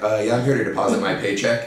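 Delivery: mock matter-of-fact, plain casual tone. Describing how he says it, the speaker plays someone at the bank, mock matter-of-fact. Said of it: "the most matter of fact... He just says it like that".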